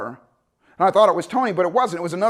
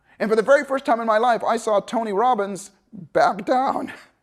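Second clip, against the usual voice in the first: plain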